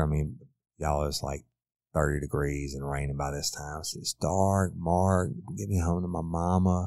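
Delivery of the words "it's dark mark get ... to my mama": imploring, over-dramatic, acted-out pleading tone. Retelling how Caitlin pleaded with Mark, imitating Caitlin begging. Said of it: "a representation of Caitlin's voice begging him".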